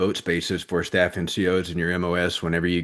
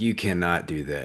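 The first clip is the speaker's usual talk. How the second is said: put-on begging, pleading voice; 4 dB quieter than usual. Retelling begging the lady not to change the MOS: imitating own begging. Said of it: "begging her".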